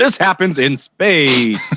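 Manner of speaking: put-on old-school seventies film trailer announcer voice. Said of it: "with those seventies announcer voices".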